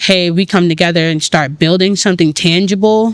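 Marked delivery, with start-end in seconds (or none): none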